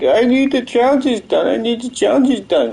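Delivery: play-acted blubbering, high whiny sobbing. Retelling what the dude kept saying: imitating someone crying. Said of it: "the dude just kept on crying".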